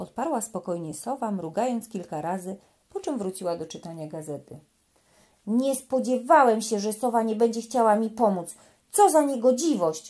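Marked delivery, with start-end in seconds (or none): 5.5-10.1 loud, outraged, furious yell. Narrating a story, the little elephant reacts to the owl: shouting in fury. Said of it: "Krzyknął Stefek".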